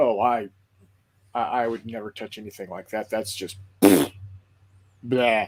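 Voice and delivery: mock sneering, low, scornful scoffing. Retelling how a man answered a question about Space Marines, imitating a scoff. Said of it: "he scoffed".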